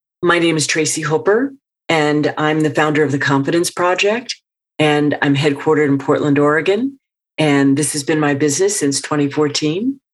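upspeak, pitch rising at every sentence end. Asked for an example of upspeak, giving a self-introduction in upspeak. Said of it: "give us an example of, a, of an upspeak".

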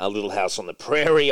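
ordinary talk

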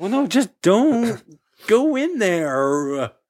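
worried, caring, concerned tone. Listening to a horror story being read, warning its characters: concerned voice. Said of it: "It's my concerned voice".

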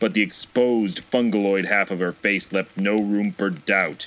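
ordinary delivery, nothing marked

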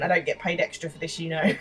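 ordinary talk

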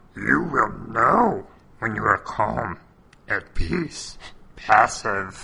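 convincing put-on wise alien voice. Acting out a scene, replying to Luke's question: Yoda impression. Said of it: "that's a good Yoda".

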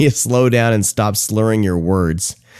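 ordinary talk, nothing marked

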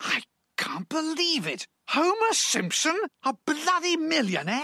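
high, stunned, shocked, incredulous disbelief. During a recording take, a character reacts to news about Homer: shocked. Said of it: "Why do you sound so shocked?".

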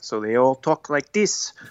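attempted put-on Canadian accent drifting into Italian. Speaker describing a story set in Canada, attempted Canadian accent. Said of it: "That was more Italian".

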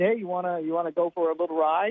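drawn-out, high-pitched Southern drawl. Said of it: "this Southern drawl".

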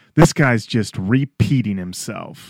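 mock loud, full-voiced, carrying voice. Retelling an audience member's remark to friends: imitating a loud remark. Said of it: "she says to her friends in full voice".

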